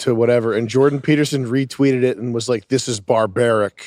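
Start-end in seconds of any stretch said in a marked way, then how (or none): 2.7-3.9 furious, indignant, condemning delivery. Retelling a retweet, imitating Jordan Peterson furious. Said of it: "He was furious".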